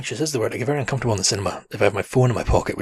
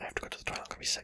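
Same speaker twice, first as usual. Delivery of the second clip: very quiet, barely audible whisper. Retelling a moment in the cinema, telling someone beside her: retelling a whisper. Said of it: "I just whispered to Stuart".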